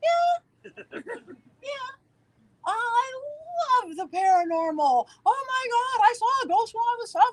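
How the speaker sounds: very high, drawn-out voice pushed up high. Retelling meeting someone who saw them on tv, the speaker's voice goes higher. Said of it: "My voice gets higher".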